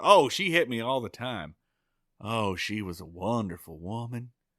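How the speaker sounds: wistful, faraway voice, lost in memory. Retelling a scene where a character answers about his mother: wistful Ernest T voice. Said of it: "Ernest T looks wistfully off in the distance and goes".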